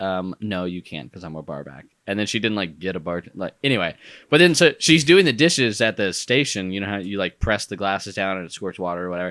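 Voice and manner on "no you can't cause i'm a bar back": acted curt, rude, impatient dismissive tone. Retelling what a bar back said when asked for a drink: imitating a rude reply. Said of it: "And she says really rudely".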